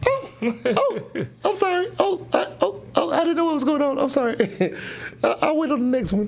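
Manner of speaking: put-on startled scream. Retelling how a worker reacted when the elevator opened, retelling a startled scream. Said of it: "she sees the elevator open up and she screams".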